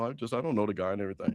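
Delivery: very low, soft, hushed indoor voice. Calling out Mike for how he talks about Trump, mocking Mike's inside voice. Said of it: "why you got this inside voice".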